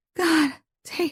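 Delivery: trembling voice. Narrator reads a woman's line to tate in an intimate scene: shaky voice. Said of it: "she says in a shaky voice".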